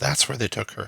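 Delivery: soft, hushed, barely there half-whisper. The narrator voices the blacksmith pointing to the door, half-whispering. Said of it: "points to the door and whispers".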